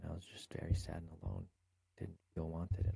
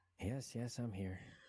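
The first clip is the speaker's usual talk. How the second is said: irritated, annoyed, pitched-up voice; 5 semitones higher than usual. Asked if they're there after being told to speak up, speaker answers: annoyed. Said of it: "Why do you sound annoyed?".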